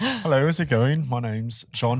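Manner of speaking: put-on refined British accent, polite tone. Recounting how the Star Wars actor introduced himself: John Boyega proper British accent. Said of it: "proper British guy".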